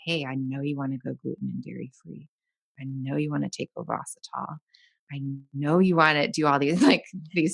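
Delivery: playfully put-on sexy, seductive tone. Speaker acts out what they say when they show up, in a mock-sexy voice. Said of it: "all in a very sexy voice".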